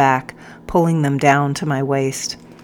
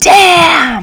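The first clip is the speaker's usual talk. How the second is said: very high, very loud, shrill, drawn-out all-out scream; 13 semitones higher, 9 dB louder than usual. Narrating a story, the captain's line as the stick comes down: screaming with all his might. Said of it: "he screamed with all his might".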